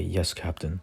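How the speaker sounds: ordinary delivery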